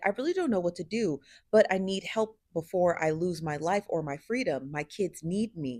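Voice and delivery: ordinary talk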